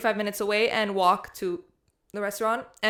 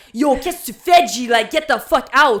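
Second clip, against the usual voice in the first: aggressive, hyped-up shout, higher and louder; 3 semitones higher, 10 dB louder than usual. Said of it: "I'm in Monster Energy drink mode".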